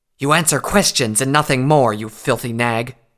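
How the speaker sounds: venomous, menacing hissed words. Narrator voices a character interrogating a bleeding captive, hissing. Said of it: "she hissed".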